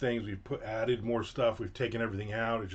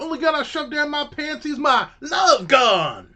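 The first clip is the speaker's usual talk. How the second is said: very loud, shrill, high-pitched put-on Southern accent; 13 dB louder than usual. Teasing someone who complains about the cold, joking in a fake southern accent. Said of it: "That was my fake Southern accent".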